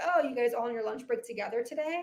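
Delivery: plain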